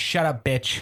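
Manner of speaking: put-on old-school New York voice and accent.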